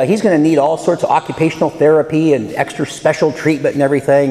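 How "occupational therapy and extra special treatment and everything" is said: ordinary talk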